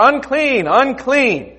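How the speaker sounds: high, loud shouted cry. Telling the story of the leper calling out behind the crowd, shouting even louder. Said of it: "the voice gets even louder".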